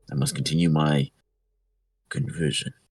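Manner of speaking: put-on low, serious tone. Retelling what a man in the tent said before stepping out, low serious tone. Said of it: "He kind of says in a low tone but serious manner".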